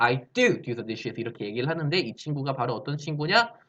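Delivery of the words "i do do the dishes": first "do" hit hard with heavy stress. English lesson on emphatic do, strong stress on first do. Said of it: "근데 이 친구 발음은 좀 달라지겠지. 강조니까".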